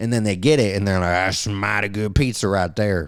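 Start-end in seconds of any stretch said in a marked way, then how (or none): 1.1-3.1 bad, failed, fake Texas accent. Describing people trying Detroit-style pizza for the first time, in a bad Texas accent. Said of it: "I can't do a good Texas".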